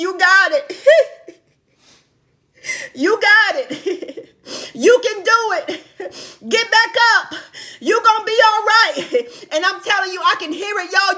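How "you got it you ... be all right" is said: acted, fervent, cheerleader-style screamed cheering. Retelling a woman screaming to a fallen runner, imitating someone screaming encouragement. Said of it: "she is screaming".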